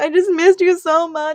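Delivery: very loud, high, put-on wailing and sobbing. Retelling how he cried to her, imitating someone crying. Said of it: "he's like crying like this".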